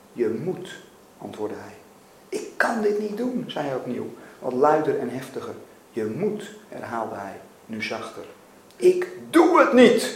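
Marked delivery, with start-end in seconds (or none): 8.7-10.1 very high, slow, drawn-out shriek. A man refusing a repeated demand, screaming. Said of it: "gilde Mac".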